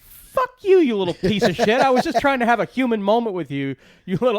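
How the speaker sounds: mock furious rant, high and loud. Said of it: "And Derek goes".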